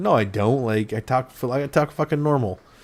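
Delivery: ordinary talk, nothing marked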